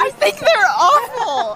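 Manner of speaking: emotional outburst, slow and loud.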